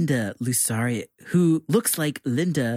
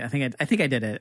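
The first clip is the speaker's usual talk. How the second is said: ordinary delivery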